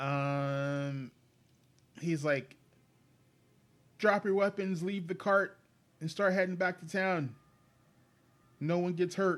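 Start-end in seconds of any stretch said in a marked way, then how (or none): 4.0-9.4 shouting. Voicing a man yelling a warning from a cliff: yelling. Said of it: "And he yells at you".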